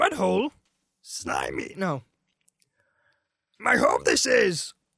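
very slow, high, swooping voice. Retelling a Star Wars scene, redoing a Yoda line in Yoda voice. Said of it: "how does he do that?".

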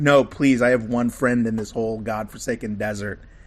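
ordinary talk

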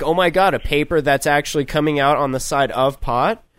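plain

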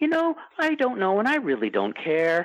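very polite swooping tone. Retelling an answer to a fan's question: Walton's very polite voice. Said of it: "in his very polite voice".

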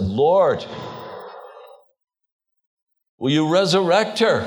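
put-on crying out. Retelling a plea to the Lord right after a death: imitating crying out. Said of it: "I immediately cried out to the Lord".

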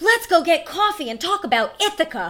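loud, high voice projected outward, mock-formal. Retelling how he came up to the speaker's table and asked, loudly. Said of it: "but rather loudly in front of everyone".

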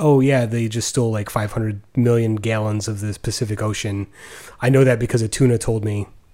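ordinary talk

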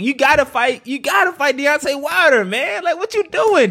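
high, laughing, urgent pleading tone.

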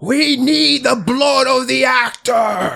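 very slow, high, long drawn-out scream. Voicing an attacker who wounds the actor: screaming. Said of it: "He screams".

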